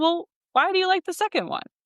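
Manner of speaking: acted, very high, plain-spoken, matter-of-fact delivery. Retelling a mentor's question at a dog show: Clifford's matter-of-fact voice. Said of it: "In his very matter-of-fact voice that Clifford has".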